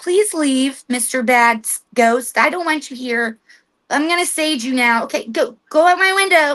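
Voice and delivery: apologetic, meek, timid, unassertive pleading. Showing how not to tell a ghost to leave; meek, unauthoritative pleading. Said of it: "use authority in your voice. Okay, don't be like".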